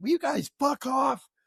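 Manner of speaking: mock, very high, fed-up, annoyed outburst. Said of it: "until he's like".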